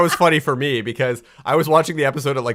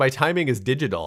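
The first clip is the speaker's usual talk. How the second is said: ordinary talk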